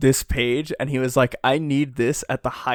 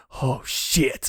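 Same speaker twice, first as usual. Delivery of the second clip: mock-huffy put-on character voice; 4 dB quieter than usual. Describing a fight scene, the speaker voices Kaido on the floor: huffy Kaido impression. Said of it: "Kaido's on the floor like huffy".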